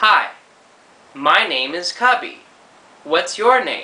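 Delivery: words spoken as if typed out. Retelling how actors read typed lines: imitating actors' typing voice. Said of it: "you do that voice".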